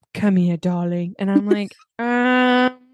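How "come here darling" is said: put-on deeper, lower voice. Describing a reading voice they found awful, put-on deeper voice. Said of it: "It was like deeper".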